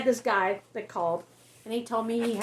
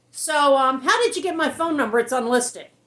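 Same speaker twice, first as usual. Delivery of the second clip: fake, raised, irritated, aggravated tone; 5 semitones higher, 7 dB louder than usual. Showing how he answers an unwanted phone call, in a put-on irritated voice. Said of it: "I put on the irritated voice".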